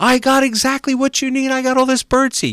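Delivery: mock eager, thrilled, very high, loud excitement. Telling a story, quoting a man running out to a flock of birds: acting out an excited man. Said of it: "he's all excited".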